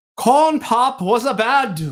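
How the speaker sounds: very slow, high, botched bad British accent. Trying out a line for a monologue: bad attempt at a British accent. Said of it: "if I put a British accent behind it".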